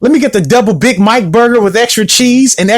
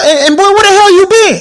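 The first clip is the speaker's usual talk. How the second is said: put-on yelling, pitched very high; 10 semitones higher than usual. Retelling how she greeted him in the car story: imitating her yelling. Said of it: "she's yelling at him".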